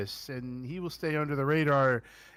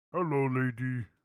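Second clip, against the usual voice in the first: clumsy, bad put-on giant voice; 2 semitones lower than usual. Quoting a movie line in a Fezzik voice. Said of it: "I can't do Fezzik's voice very well".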